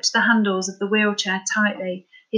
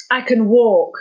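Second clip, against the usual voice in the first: angry, through gritted teeth, louder; 6 dB louder than usual. Narrator reads Jason's reply to Scott, spoken through gritted teeth. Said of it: "replied through gritted teeth".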